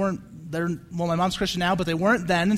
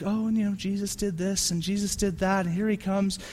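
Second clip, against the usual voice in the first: mock-sweet voice, much quieter; 7 semitones lower, 7 dB louder than usual. Mimicking an old woman teaching the Bible story about Jesus, imitating a sweet voice. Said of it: "she's got the sweet voice when she's talking Jesus".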